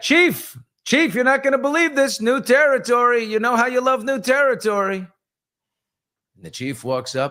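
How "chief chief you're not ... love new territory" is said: very high-pitched shouted yell. Telling a joke, retelling the lead scout calling back: imitating a scout yelling. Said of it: "and he yelled back".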